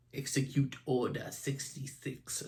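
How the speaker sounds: hushed, breathy, sinister villain emperor whisper. Recapping an episode's scene for viewers, doing a really bad Palpatine impression. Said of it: "that's a really bad Palpatine impression".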